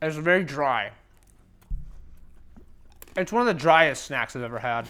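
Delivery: talking while chewing. Taste-testing a snack with a friend, talking while chewing. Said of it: "I'm still chewing it".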